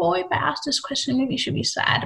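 high, soft, cooing, mock pitying voice.

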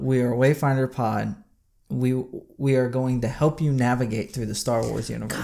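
normal talking voice

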